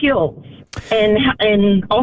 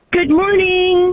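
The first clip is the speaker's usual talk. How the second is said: cheery, bright, very high-pitched tone; 9 semitones higher than usual. A caller greets the hosts on air, happy. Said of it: "you sound happy".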